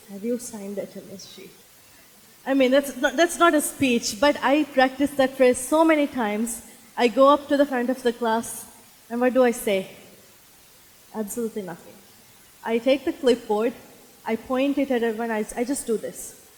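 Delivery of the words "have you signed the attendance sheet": very soft, under-the-breath murmur. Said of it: "under my breath".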